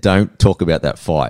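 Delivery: ordinary delivery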